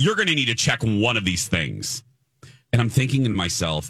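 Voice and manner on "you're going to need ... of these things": put-on harsh, aggressive voice. Retelling what a gate agent said at check-in: imitating an aggressive gate agent. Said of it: "He was very aggressive".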